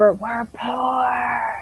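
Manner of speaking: speaking in a whisper. Speaking in character to the priests in a game: whispering. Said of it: "I whisper".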